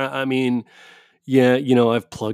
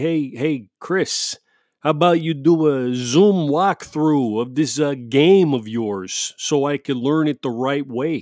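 slow, friendly, put-on Italian accent; 2 semitones higher than usual. Acting out a call asking Chris for a walkthrough of his game, in a put-on Italian accent. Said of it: "I don't know why I'm speaking like that. It's Italian".

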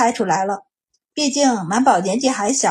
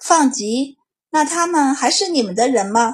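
ordinary delivery

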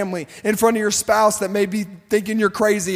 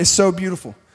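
tearing up, choked up with emotion, lower pitch; 3 semitones lower than usual. Describing a child worshiping at home, tearing up. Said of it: "I'm tearing up just thinking about it".

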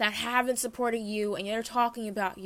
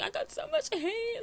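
very high, slow, drawn-out weepy wail; 13 semitones higher, 4 dB quieter than usual. Retelling a video in which another person complained about hate: imitating someone crying. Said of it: "she was crying".

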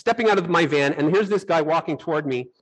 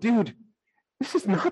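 high, panicked protesting voice; 5 semitones higher than usual. Retelling being driven ever farther by a passenger: imitating panicked self. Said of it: "I'm panicking at this point".

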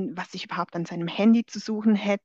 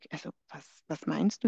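put-on calm voice, lower and quieter; 4 semitones lower, 6 dB quieter than usual. Retelling a confrontation about a chat, quoting the man's answer: retelling his calm reply. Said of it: "Und er ganz ruhig".

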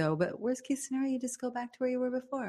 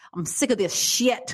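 play-acted fed-up rant, loud and drawn out; 2 semitones higher, 7 dB louder than usual. Imitating a friend's rant in a changed voice: imitating Adam's ranting voice. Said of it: "Adam will go on some rants, and he'll go".

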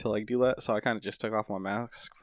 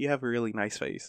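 put-on hush, very soft and quieter; 3 dB quieter than usual. Retelling a woman walking up to the speaker's desk, imitating her quietest voice. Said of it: "in the quietest voice ever".

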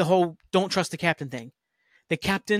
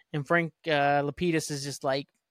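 ordinary talk, nothing marked

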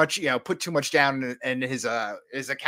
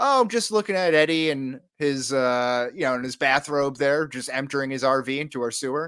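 ordinary talk

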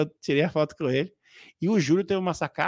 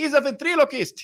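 put-on shrill, very high-pitched shout; 10 semitones higher, 4 dB louder than usual. Retelling someone announcing his job to others, retelling a shout. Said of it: "é, gritando".

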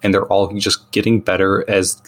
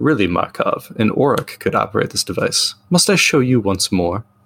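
swooping, theatrical, put-on vampire voice. Reading a game card's flavor text aloud to other players, in a vampire voice. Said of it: "I like the vamp voice".

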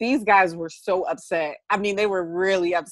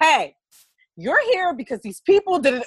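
mock raised, high, swooping yell; 9 semitones higher, 4 dB louder than usual. Retelling how she answered the complaining player: retelling her own yell.

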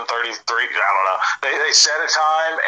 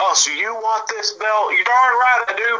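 very high, shrill screaming yell; 9 semitones higher than usual. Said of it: "he's yelling, screaming".

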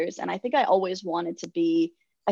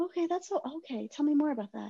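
gentle, soft, high therapist voice; 8 semitones higher, 6 dB quieter than usual. Recalling a counselor's sessions, the speaker imitates her: therapy voice. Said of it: "Total therapy voice".

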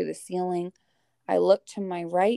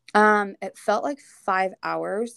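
ordinary talk, nothing marked

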